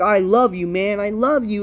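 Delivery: mock sappy, lovey-dovey wrestler promo voice. Mocking how wrestlers cut promos: mocking sappy wrestler promo. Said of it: "everyone's like".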